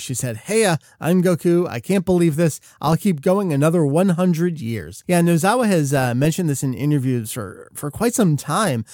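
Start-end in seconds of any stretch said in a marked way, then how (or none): none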